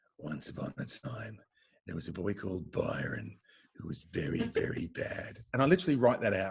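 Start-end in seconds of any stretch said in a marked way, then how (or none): 0.2-5.4 deepest, darkest, ominous bedtime-story voice. Acting out how Dad tells a scary bedtime story: imitating Dad's deepest, darkest voice. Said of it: "in his deepest, darkest voice".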